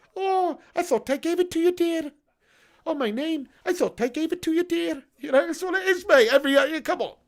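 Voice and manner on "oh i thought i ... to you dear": high Scottish woman's accent, stress on "dear". Speaker demonstrates a high-pitched Scottish woman saying dear: Mrs. Doubtfire voice. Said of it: "High pitched Scottish woman saying dear".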